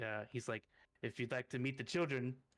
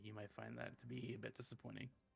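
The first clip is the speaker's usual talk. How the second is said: very quiet, barely audible, hushed mutter; 11 dB quieter than usual. As his character walks away from a woman, the player says it muttered under his breath. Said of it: "under his breath".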